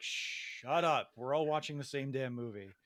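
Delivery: plain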